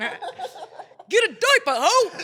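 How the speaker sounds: shrill, very high, very slow, drawn-out yell. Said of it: "he yells out".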